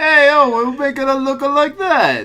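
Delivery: imitated Bronx accent. Retelling what an Italian man called out the window, in a Bronx accent. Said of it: "he sounded like he was from the Bronx".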